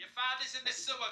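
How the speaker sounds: very loud, very high Boston accent. Friends trying out regional accents, one takes a turn: boston accent. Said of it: "Bostonian accent".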